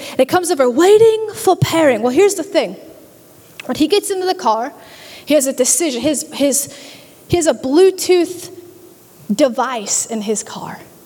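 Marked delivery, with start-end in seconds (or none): 0.7-2.0 higher, louder, bad British accent. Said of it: "It's British".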